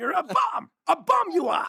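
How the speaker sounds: very high, slow, deliberate wise-master voice. Playing Yoda as Mickey scolding Rocky: Yoda-style Mickey voice. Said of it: "Yoda ass Mickey".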